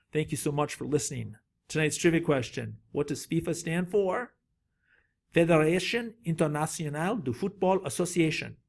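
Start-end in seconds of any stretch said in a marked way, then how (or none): 5.3-8.5 accent somewhere between French and Italian. Answering a trivia question, in an accent somewhere between french and italian. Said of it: "That's kind of somewhere between a French and Italian accent".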